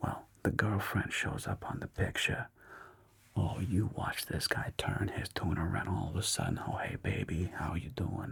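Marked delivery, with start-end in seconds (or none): 6.7-8.3 mock soft, sweet-talking voice. Retelling a documentary subject greeting his girlfriend: imitating a guy going all soft. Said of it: "He got all soft like a pussycat".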